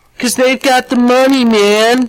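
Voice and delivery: cartoon hippie voice. Mocking a protester at a rally: South Park hippie voice. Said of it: "more of a South Park hippie attempt".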